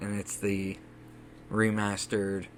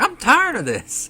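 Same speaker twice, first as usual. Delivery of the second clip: high, loud, slow, fed-up elf voice. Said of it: "pulls out a dagger like".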